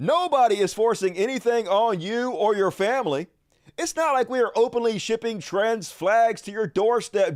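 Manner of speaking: put-on sardonic, tongue-in-cheek, sarcastic tone. Reading out a post by Elijah Schaffer: imitating Elijah Schaffer's sarcasm. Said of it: "He's being sarcastic".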